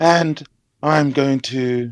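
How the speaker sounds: put-on very calm, even voice. Imitating how Darth Pina bullies people: imitating Darth Pina's calm voice. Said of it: "just so calmly".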